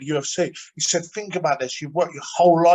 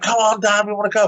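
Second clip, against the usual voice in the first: put-on children's screaming, yelling, pleading voices; 5 semitones higher, 4 dB louder than usual. Retelling his kids waiting to go out: imitating kids screaming. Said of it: "my kids are screaming".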